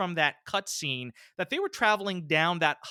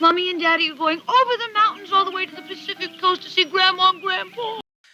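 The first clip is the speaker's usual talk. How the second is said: put-on baby talk voice, higher and louder; 8 dB louder than usual. Telling a young boy his parents are going to see his grandparents: kiddie voice. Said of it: "she's doing, like, the kiddie voice".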